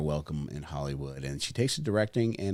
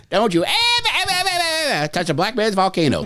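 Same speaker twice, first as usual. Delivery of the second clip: very high, very loud, shrill, swooping, stretched cartoon voice; 14 semitones higher, 8 dB louder than usual. Riffing on a made-up volcano movie, slipping into an Elmer Fudd voice. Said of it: "Started getting like an Elmer Fudd".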